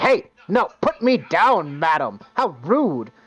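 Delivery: slow talking-skull voice. Voicing a rotting skull on a stake as a player picks it up: Bullywog skull head voice. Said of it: "when you reach out for it, it's like".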